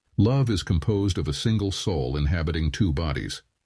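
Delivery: storytelling narrator's voice. A storyteller sample played from a voice library, storyteller voice. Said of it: "说书人的声音".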